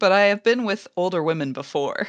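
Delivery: normal talking voice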